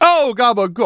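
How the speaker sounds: put-on New York accent. A quick aside in conversation, put-on New York accent. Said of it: "I was doing my New York accent".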